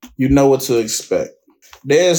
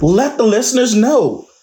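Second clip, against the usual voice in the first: enthusiastic, eager delivery. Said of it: "say it like you're enthusiastic".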